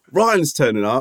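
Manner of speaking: ordinary talk, nothing marked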